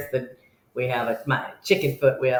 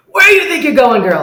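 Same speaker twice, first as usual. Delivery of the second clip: shrill, very high, very loud scream; 12 semitones higher, 12 dB louder than usual. Retelling how bouncers grabbed the speaker at a door: imitating bouncers screaming. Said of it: "start screaming at me".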